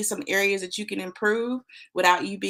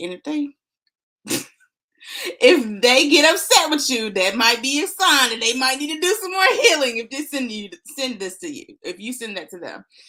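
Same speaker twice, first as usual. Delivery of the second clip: loud talking through laughter; 4 semitones higher, 6 dB louder than usual. Asking viewers to share the video, laughing while talking. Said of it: "sorry, I'm laughing".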